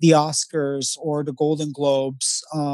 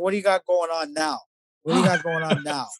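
tough, put-on New York wiseguy mobster accent. Retelling dad pushing a showroom owner to give his son work, new york mobster voice. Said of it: "Robert De Niro mobster".

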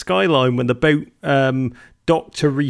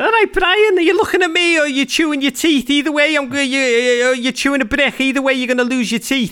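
strong Liverpool Scouse accent, very high-pitched; 11 semitones higher, 3 dB louder than usual. Explaining the Liverpool accent to listeners, then demonstrating it; Scouse accent. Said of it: "a Scouse accent, an incredible Scouse accent".

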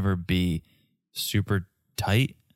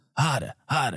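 put-on Boston accent; 5 semitones higher than usual. Joking with a co-host, the speaker repeats the phrase in a boston accent. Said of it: "hotter, harder with a Boston accent".

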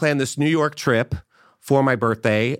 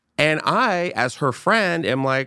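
ordinary delivery

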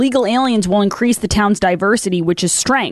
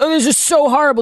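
mock sanctimonious, self-pitying victim tone; 6 semitones higher than usual. Imitating how they all talk, in a mock-sanctimonious victim tone. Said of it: "It's this like sanctimonious victim playing tone of voice that they're all using".

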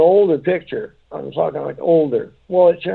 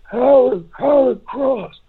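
put-on high-pitched elderly man voice; 8 semitones higher than usual. Retelling what a spirit on the recorder said: imitating an old man's voice. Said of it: "but he was an old man".

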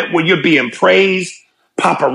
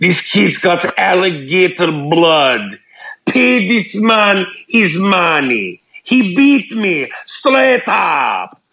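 put-on English spoken in a Russian accent. In a scene from the movie Rounders, speak with a Russian accent. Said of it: "I wonder if Russians co-sign that accent".

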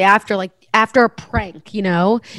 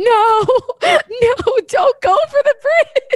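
stretched shriek, very high, very slow, drawn out. Speaker recounts watching a show, retelling a scream at the tv. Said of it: "I screamed at the television".

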